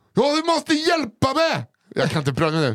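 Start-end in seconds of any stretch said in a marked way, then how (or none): 0.2-1.7 very high-pitched, almost screaming. Retelling a trapped woman's plea for help: imitating a near scream. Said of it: "Hon nästan skriker".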